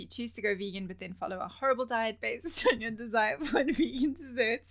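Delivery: loud speech broken by laughter. Reading a quote from Paul aloud, the speaker is laughing while reading. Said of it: "I'm laughing because".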